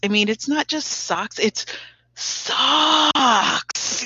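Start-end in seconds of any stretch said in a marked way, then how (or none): 2.2-4.0 high, awestruck, reverent delivery. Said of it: "make us feel how wonderful those socks are".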